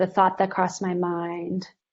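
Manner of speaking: ordinary talk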